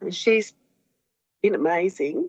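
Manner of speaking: moved, heartfelt, welling-up emotional voice. A speaker praising a doctor who helped her after her husband's death, getting emotional. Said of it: "I just got emotional".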